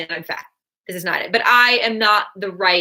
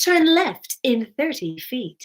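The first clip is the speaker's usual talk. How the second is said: high-pitched GPS sat-nav voice; 5 semitones higher than usual. Showing off the voices they sometimes do, in a GPS navigation voice. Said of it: "I'll do G P S".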